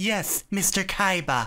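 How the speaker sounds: man straining to sound female, high, put-on girly voice. Describing one voice actor in a dub: man faking a girl's voice. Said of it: "Like a dude trying to sound like a girl".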